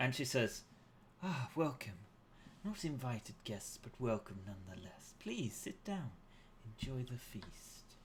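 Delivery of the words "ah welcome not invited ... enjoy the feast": soft, gentle, quietly commanding voice. Voicing a woman greeting guests at a feast table: soft commanding tone. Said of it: "speaks with this soft tone".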